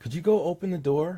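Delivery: rising, question-like pitch on "door". Demonstrating a question in a lesson on inflection, rising pitch on door. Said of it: "upward inflection in a sentence at the end of it, the upward tone, that's a question".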